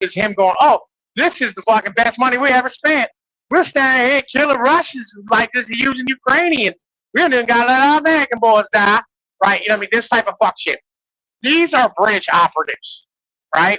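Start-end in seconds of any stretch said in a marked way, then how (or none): 0.6-9.0 pitched-up, heavy Southern US drawl. Describing a man who talks like he's from down south: Lindsey Graham Southern drawl. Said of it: "he talks like a fucking bag down south".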